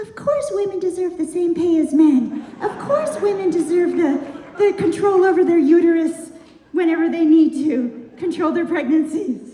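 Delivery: very high-pitched, coaxing voice. Showing how men must talk to her dog, in a very high-pitched voice. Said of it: "in a very high-pitched voice".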